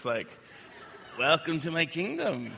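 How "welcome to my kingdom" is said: put-on creepy voice. Speaker imagines being greeted at the gates of heaven, creepy Jesus voice. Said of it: "he had a really creepy voice?".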